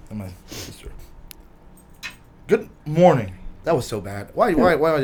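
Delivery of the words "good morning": mock vitriolic, hateful tone. Saying good morning when asked to say it racist: mock vitriolic greeting. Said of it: "with vitriol?".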